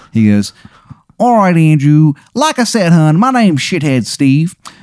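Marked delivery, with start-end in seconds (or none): 1.1-4.5 high, bad Maryland accent, half Southern. Retelling what a character called Steve said: bad Maryland accent. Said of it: "his Maryland accent is".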